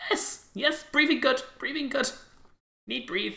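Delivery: very high little creature voice. Voicing a small creature speaking into minds after a spore cloud: small creature's telepathic voice. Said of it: "you hear the voice in your head".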